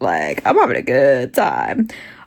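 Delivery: very low, swooping voice, talking through giggles. Reading a dark romance to her viewers, giggling while talking. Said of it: "I'm giggling, guys".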